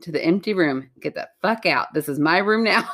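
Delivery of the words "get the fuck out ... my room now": put-on tough bravado attitude. Retelling telling an empty room to leave: imitating a bravado attitude. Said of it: "I pulled up my bravado attitude".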